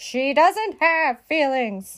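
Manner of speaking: loud, sharp shouted voice. Reading a story, Eugenia answers her sister about Mercy: shouted. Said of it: "shouted Eugenia".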